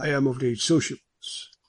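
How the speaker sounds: plain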